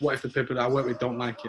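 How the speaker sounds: normal talking voice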